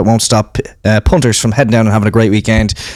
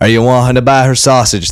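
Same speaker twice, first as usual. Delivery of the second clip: put-on Wexford accent. Retelling what everyone on a night out asked: imitating a Wexford accent. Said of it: "That's how they sound in, in Wexford".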